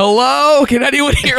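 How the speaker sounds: mock high-pitched yell, loud. Retelling calling out from a balcony to the other apartments: retelling a yell. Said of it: "I'm out on the balcony and I'm yelling".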